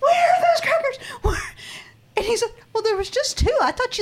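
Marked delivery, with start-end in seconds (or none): 0.0-1.4 mock scream, much higher, slower. Speaker reenacting their own yell from the kitchen, retelling a scream. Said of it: "I start screaming like from the kitchen".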